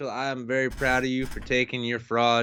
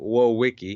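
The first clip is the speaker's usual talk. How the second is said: put-on Swedish accent, w sounds dropped; 5 dB louder than usual. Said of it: "as Pewd says it, ... they don't have W's in Sweden".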